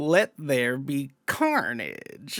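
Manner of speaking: low, hushed, very slow, drawn-out delivery. Clarify how the actor really says his line, in a Woody Harrelson impression. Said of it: "He doesn't even say it like that. He says it like".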